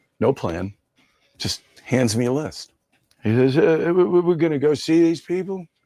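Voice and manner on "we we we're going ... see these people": stammering, hesitant, pitched-up voice, stumbling over first words. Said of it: "that impression. That almost sounded like [name]".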